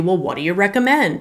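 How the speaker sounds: ordinary delivery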